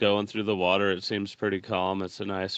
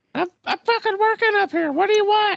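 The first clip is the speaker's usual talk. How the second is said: tiny voice, very high and loud, squeaky; 8 dB louder than usual. Grim answers a companion calling his name, in Grim's tiny little voice. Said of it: "he has a tiny little voice".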